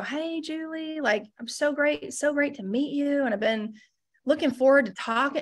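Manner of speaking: unhurried, slow, drawn-out South Carolina drawl. Speaker imitates a man from South Carolina greeting Julie; slow Southern drawl impression. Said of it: "he talked so flippin' slow".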